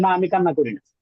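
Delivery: ordinary delivery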